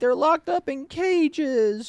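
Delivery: play-acted very high, slow, drawn-out crying voice. Mocking a politician's complaint about migrants: imitating AOC crying. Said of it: "AOC crying and being like".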